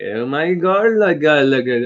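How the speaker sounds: slow, put-on Indian-English accent. Showing how a group talks while moving the neck: imitating how Indians talk. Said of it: "they talk like this".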